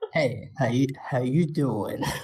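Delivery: very low, close-mic radio DJ voice. A speaker offers to switch voices and greets the listeners: put-on radio voice. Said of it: "Shall I do Radio Mox voice?".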